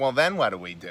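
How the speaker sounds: put-on low New York accent.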